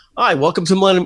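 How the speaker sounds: friendly, authoritative salesman voice. Showing how to greet a customer walking into the showroom: warm, welcoming, commanding voice. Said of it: "commanding but not overpowering voice and say".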